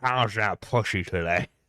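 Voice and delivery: talking with a cigar held in the mouth. Imagining someone asking a crude question: Harvey Weinstein voice with cigar. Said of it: "fucking Harvey Weinstein with, like, a cigar in his mouth".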